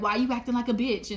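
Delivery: put-on, taunting whisper. Retelling what someone whispered to him in the gym, retelling a whispered taunt. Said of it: "He just came up beside me and whispered".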